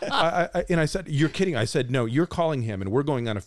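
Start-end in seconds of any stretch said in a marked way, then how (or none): none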